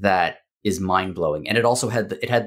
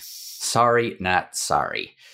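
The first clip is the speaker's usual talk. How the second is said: put-on American accent. While chatting about game coverage, the speaker does an american accent impression. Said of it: "that was my American impression".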